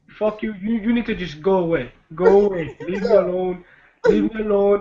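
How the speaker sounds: little put-on Hawaiian accent, polite-sounding. Acting out a man telling someone to leave him alone, in a put-on Hawaiian accent. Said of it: "With his little uh, Hawaiian accent".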